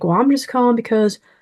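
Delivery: put-on thick Southern accent. Retelling what a caller said after a low offer, strong Southern accent. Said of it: "he had this strong Southern accent".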